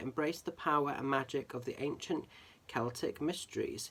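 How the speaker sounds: normal talking voice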